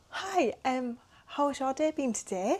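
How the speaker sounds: high, slow, bright social-media presenter tone. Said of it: "you've got to have a high tone".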